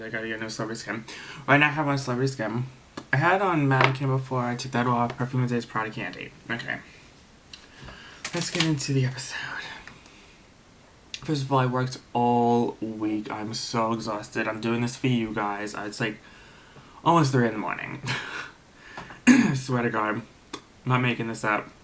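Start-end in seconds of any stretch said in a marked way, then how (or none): 8.3-9.4 whispered. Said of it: "I mean, I don't have to whisper".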